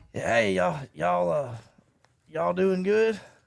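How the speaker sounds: loud, raspy, rough country cowboy voice. Retelling how he greeted the kids: imitating a cowboy voice. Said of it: "obviously he's a cowboy or something".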